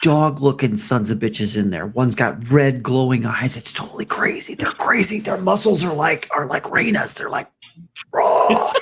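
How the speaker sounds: theatrical stage whisper. Huddled close with the party around the corner, speaking in a stage whisper. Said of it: "We're gonna stage whisper".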